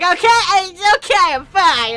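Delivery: mock booming drunken drawl, very loud and very slow. Imagining Fox McCloud drunk, insisting he is fine: imitating a drunk Fox McCloud. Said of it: "maybe he's drunk and he's like".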